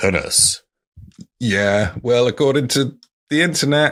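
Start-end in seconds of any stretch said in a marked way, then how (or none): 0.0-0.6 pinnace pronounced in a posh, upper-class way. Saying a boat's name the way a posh person would: posh person's accent. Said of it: "pronounce it like that guy".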